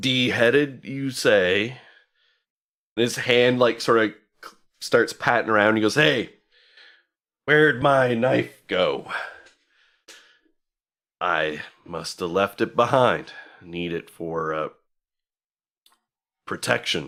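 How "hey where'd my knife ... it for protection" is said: put-on drunk sailor voice, lower. Voicing a sailor who has been drinking ale: drunk half-elf sailor voice. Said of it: "it is indeed a sailor".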